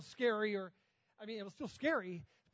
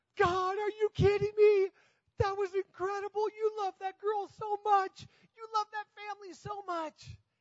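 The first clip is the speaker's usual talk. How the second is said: put-on weeping, tearful, very high and raised voice; 10 semitones higher, 5 dB louder than usual. Retelling watching a girl run to her mom, retelling own tearful words. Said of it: "And I immediately start crying".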